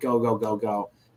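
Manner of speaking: ordinary talk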